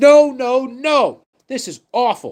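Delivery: mock screaming voice. Imitating a fan in a TikTok video, cheering on UMass: imitating a superfan screaming. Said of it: "He's just screaming in the".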